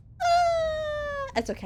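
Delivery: very high, drawn-out fake sobbing. Saying the listeners are bullying them, the speaker pretends to shed tears: mock crying. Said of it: "let me shed a couple tears".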